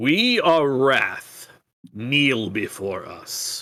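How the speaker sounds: slow, imperious voice used to commanding respect. Voicing the Iron Heart speaking imperiously to the party: voice used to commanding respect. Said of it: "in a voice that is clearly used to commanding respect".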